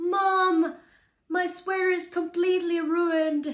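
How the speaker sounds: put-on slow, high, loud, stretched-out toddler scream. Retelling her son's reaction at the washing machine: imitating son screaming. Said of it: "He was screaming at me that".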